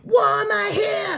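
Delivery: very high, very slow, drawn-out screech. Retelling a scene in a van, imitating someone screaming. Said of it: "she's still screaming".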